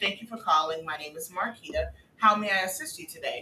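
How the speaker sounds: customer-service phone work voice. Retelling answering a caller with the set greeting at work; phone work voice. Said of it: "my voice, for some reason, changes dramatically at work".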